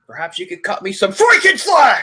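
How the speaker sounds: high, panicked voice with wildly swinging pitch. Imitating an actor for the others: Nicolas Cage freaking out. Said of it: "freaking out".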